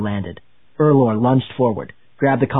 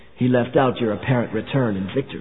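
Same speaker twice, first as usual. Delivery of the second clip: ordinary delivery, nothing marked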